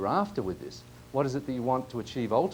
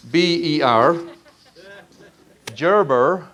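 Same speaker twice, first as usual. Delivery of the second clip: very loud, put-on American accent; 4 semitones higher, 8 dB louder than usual. Recommending a book and spelling the author's name, attempted American accent. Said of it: "I'm trying my best American accent".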